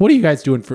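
loud, voice breaking and cracking partway through. Speaking to the group at christmas, voice cracking. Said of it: "Whoa, my voice cracked".

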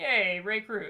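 flat, half-hearted, unenthusiastic little yay. Cheering for an illustrator little is known about, unenthusiastic cheer. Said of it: "Don't sound too enthusiastic".

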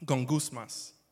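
gongusmas pronounced with a Spanish accent. Saying a Greek word aloud: Spanish accent. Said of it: "I say it with a Spanish accent".

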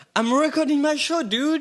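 amused, laughing, high and loud.

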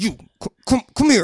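put-on aggressive voice. Showing how they act when in a bad mood: mock-aggressive. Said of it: "mine's just like aggressive".

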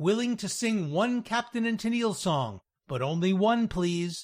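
usual speaking voice

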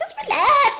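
very high-pitched character voice. Retelling how Mick says just relax, in Trent from Punchy's voice. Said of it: "Mick says it in Trent from Punchy's voice".

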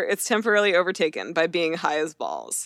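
ordinary talk

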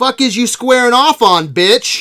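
loud high confrontational delivery. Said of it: "such a dead-on [name] impersonation".

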